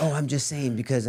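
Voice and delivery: normal talking voice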